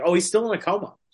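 put-on casually happy tone. Recounting a man's reply about his brother being in a coma, mock-nonchalant. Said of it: "he said it so nonchalantly".

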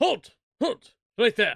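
very loud, high-pitched shouting guard voice. Narrating a scene, voicing one of the guards calling out: guard calling halt. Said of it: "you hear".

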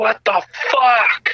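high, panicked, play-acted yell. Recounting a jump where the parachute comes out twisted: retelling own yelling. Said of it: "And I start yelling".

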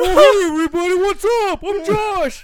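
very high, very loud, very slow drawn-out voice. Greeting listeners in a friend's manner after being welcomed: imitating Josh. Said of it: "that is so accurate".

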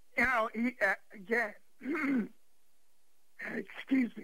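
high, strained, choked up, words forced through tight throat.

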